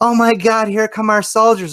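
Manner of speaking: very high, loud, excited, thrilled squealing gush.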